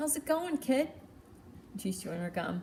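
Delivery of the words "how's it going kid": put-on higher-pitched Jersey accent. Retelling Dottie greeting the speaker at the counter, in her Jersey accent. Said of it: "Dottie's like in her Jersey accent".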